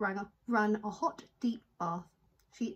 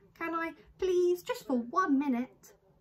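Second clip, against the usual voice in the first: put-on pleading little boy voice; 8 semitones higher, 3 dB louder than usual. Lester asks his mother, Mrs. Large, again to let him play, pleading. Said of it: "child begs mother to let him play".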